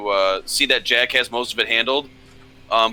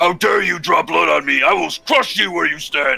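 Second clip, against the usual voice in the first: furious, rasping, rough, high angry orc voice; 6 semitones higher, 3 dB louder than usual. Voicing an orc wounded in a fight on a boat: angry orc voice. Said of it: "get quite angry".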